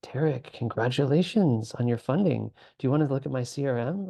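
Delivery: overly happy, fawning, gushing chatbot voice. Complaining about an AI assistant's neediness, doing a clingy, gushing ChatGPT impression. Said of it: "sounds like this. ... Like it's just so clingy and happy and praising".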